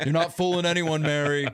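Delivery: high, loud mock yell. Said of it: "I can just yell at her and be like".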